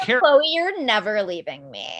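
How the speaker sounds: high-pitched voice, swooping in pitch. Mocking how Tristan talks: imitating Tristan's high-pitched voice. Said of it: "That's how he talks".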